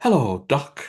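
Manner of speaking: heavenly, grand arena ring announcer call. Retelling a podcast bit where an announcer greets the hosts: Howard Finkel voice. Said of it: "the Howard Finkel voice".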